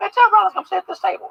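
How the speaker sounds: very high-pitched calling-out voice. Retelling how a man called the speaker over to his table, imitating a high-pitched voice. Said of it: "that high pitched voice".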